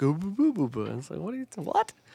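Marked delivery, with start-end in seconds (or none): 0.0-0.8 video-game gibberish babble voice. Explaining to the other speaker how the characters in a game sound, Sims gibberish voice. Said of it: "That is what they sound like".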